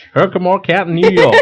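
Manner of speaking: put-on Southern American accent. Repeating the county name the other speaker just gave, in a southern accent. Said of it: "but that was with a southern accent".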